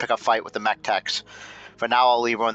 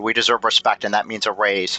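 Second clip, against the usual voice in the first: ordinary delivery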